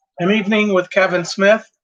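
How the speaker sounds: loud, shouting voice. Speaker introduces a video while the dishwasher runs, shouting. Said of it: "I don't mean to shout".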